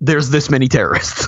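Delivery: plain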